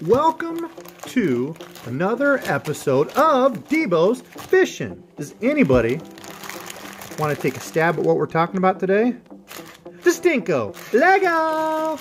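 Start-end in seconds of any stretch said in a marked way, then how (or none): 10.0-12.0 slightly aggressive, excited, higher pitch. Announcing today's topic to the fishing friends: a little aggressive. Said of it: "that intro was a little aggressive".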